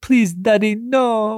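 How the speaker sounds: very high, fun, tiny little voice. Retelling a film scene where a boy begs his father: Baron's fun little voice. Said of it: "with his fun little voice".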